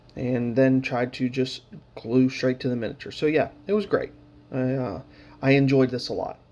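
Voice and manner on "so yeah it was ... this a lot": heavy sarcasm with mock enthusiasm, meaning the opposite. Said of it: "the sarcasm in my voice".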